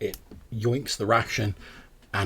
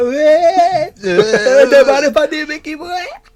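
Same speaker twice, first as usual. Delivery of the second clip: put-on tipsy fox voice, higher and louder; 14 dB louder than usual. Voicing a brandy-soused fox nudging a companion: drunk fox in a flat cap. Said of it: "being like".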